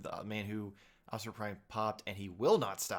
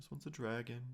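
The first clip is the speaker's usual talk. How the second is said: put-on child voice, quieter; 2 semitones higher, 6 dB quieter than usual. Acting out a child showing toys to a parent's friend: imitating eight-year-old Nate. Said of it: "this is what, like, eight-year-old Nate sounded like".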